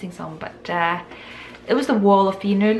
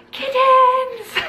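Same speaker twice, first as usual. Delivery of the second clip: high, loud, delighted squeal. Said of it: "I was just like".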